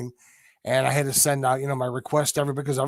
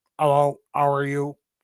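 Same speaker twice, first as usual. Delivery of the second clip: put-on robot voice; 4 dB louder than usual. Retelling a show where the voice went strange: Voltron voice. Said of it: "I was sounding like Voltron".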